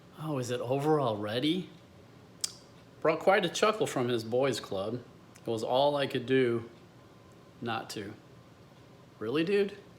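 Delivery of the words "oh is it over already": snide, mocking, dismissive sarcastic tone. Speaker quotes a guy at the end of the night talking to his buddies, mimicking a sarcastic remark. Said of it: "he sarcastically said to all his buddies".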